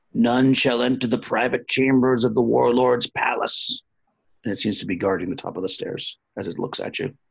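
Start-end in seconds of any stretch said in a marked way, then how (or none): 0.1-3.8 dreadful, terrible guardian monster voice. Narrating a game to players, voicing a creature guarding the stairs, terrible creature voice. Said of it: "it speaks in a terrible voice".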